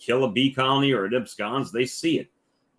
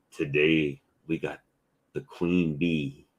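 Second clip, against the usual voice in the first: narrator-style put-on voice; 7 semitones lower, 3 dB quieter than usual.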